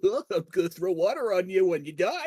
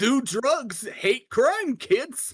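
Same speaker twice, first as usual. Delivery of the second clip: demented, goofy, unhinged character voice, pitched high; 5 semitones higher than usual. Putting on a made-up voice for a prank: demented goofy voice. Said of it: "I think that voice perfectly encompasses the asshole".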